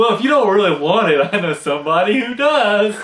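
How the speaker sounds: mock smug superior tone. Retelling a scene where Homer answers Marge: imitating Homer, really arrogant. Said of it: "really arrogant".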